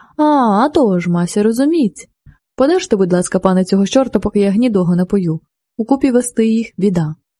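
ordinary delivery, nothing marked

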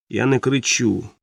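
ordinary delivery, nothing marked

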